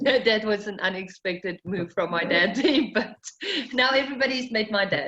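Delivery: speech broken up by laughing through words. Explaining after an unexpected move from her dad: laughing while talking. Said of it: "I'm sorry, I'm laughing".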